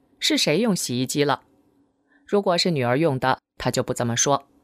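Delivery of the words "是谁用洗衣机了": ordinary talk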